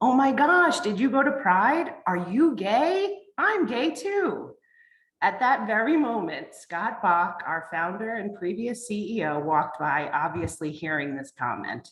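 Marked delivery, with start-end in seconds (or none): 0.0-4.5 mock very loud, carrying, pitched-up voice. Recounting what a person asked them, retelling a very loud question. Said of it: "ask in a very loud voice".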